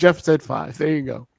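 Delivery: ordinary delivery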